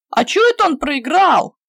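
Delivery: loud, outraged, indignant clamoring protest. Boys at a card game cry out together: indignant clamor. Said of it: "возмущенно загудели пацаны".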